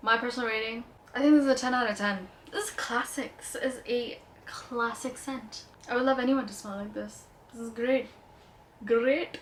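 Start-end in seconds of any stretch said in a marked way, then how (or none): 7.5-9.4 natural Indian accent slipping out. Speaker reviewing perfumes gives a personal rating; indian accent slipping out. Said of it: "my Indian accent comes out".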